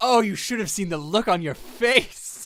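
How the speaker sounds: laughing speech in character voice. Voicing a character who laughs at the group: laughing while talking in character. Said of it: "He just, like, laughs".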